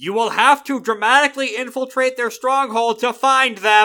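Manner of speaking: very loud, high, theatrical, dramatic declaration. Narrating a character in the story who raises his voice. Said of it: "He raises his voice".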